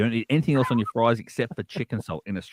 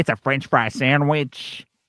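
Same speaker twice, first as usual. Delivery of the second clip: put-on American accent with American wording; 4 semitones higher than usual. Explaining a chip butty, saying it the way americans would, american accent. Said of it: "Is that your American accent?".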